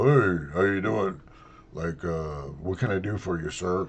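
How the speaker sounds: unnaturally pushed-down low voice with strain. Imitating a woman who strains to make her voice low: strained, forced low voice. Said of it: "trying to strain to make her voice low. Like she go".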